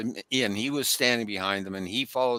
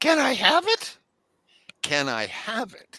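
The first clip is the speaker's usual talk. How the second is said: put-on high squeaky alien voice, higher; 11 semitones higher, 3 dB louder than usual. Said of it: "It sounded high and squeaky".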